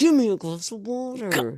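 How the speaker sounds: angry put-on ghost voice. Picturing the ghost from the story just read: imitating a pissed-off ghost. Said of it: "this really pissed off ghost".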